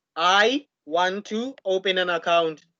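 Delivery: ordinary delivery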